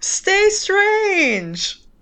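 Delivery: high, loud, dramatic gasped delivery.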